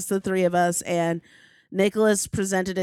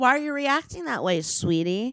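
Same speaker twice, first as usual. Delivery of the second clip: pitched-up, manipulative, blame-shifting tone; 5 semitones higher than usual. Imitating Colin calmly asking why she reacts that way: imitating Colin gaslighting. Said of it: "And then you're like".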